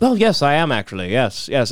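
put-on British accent, words drawn out unhurriedly. Retelling a meeting with an actor at a stoplight: imitating a British accent. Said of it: "of course, British".

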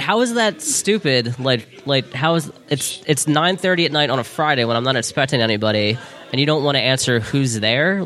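plain

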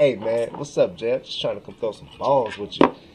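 mock suspect-sounding, innuendo-laden, suggestive, loaded delivery. Acting out a text inviting a friend to bowl: mock suggestive delivery. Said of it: "why you say it like that?".

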